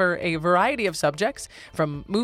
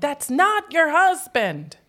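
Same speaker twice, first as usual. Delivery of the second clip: put-on high-pitched, loud, drawn-out protesting yell like a little girl; 8 semitones higher, 5 dB louder than usual. Retelling what a daughter shouted on the street: imitating a child yelling. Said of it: "And she's yelling".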